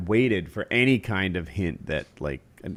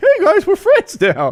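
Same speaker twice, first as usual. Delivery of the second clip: put-on chicken voice, higher and louder; 9 dB louder than usual. Retelling how a friend voiced a chicken: imitating a friend's chicken voice. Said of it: "Kyle had a chicken voice".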